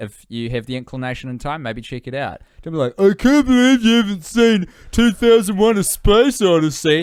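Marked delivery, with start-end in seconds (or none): 3.0-7.0 very high, shrill, very loud, booming put-on voice. Advising how not to recommend films, act out the wrong way: voice of someone you'd disagree with. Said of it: "That voice you did".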